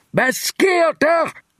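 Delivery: very high-pitched, half-bellowed, near-roaring yell. A man calls out after a loud ripping sound below him, almost roaring. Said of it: "Nærmest brølede Wireman".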